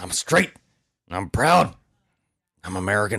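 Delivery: slow, drawn-out proclaiming, line by line. Answering a wish to talk like Alex Jones: Alex Jones voice. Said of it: "You can do the voice way better".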